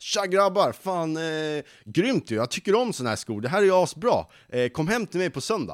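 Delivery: high, loud, full-energy excited blast. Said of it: "med full jävla energi".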